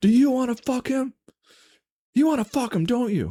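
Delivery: very high-pitched, screeching scream. A speaker recounts her mother-in-law's outburst, imitating someone screaming. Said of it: "After hearing her screaming".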